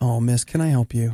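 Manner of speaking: gentle, kind, very low voice. Showing how the store worker should have spoken, in a low, kind tone. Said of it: "In a low, kind tone".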